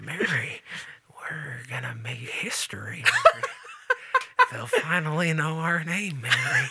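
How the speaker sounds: ASMR whisper with the pitch swooping. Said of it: "Jimmy Stewart is like".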